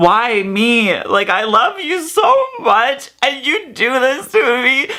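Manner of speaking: play-acted sobbing, distraught, barely holding together. Retelling a fight in a relationship: reenacting own distraught breakdown plea. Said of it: "full on just fucking having a mental breakdown".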